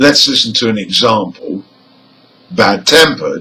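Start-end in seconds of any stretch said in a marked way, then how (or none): 2.5-3.4 emphasis on tempered. Teaching stress in compound adjectives, stress on TEMPERED. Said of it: "The stress is on the second part".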